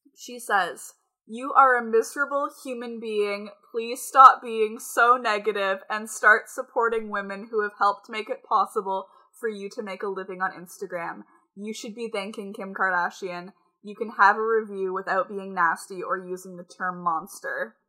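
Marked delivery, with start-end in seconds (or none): none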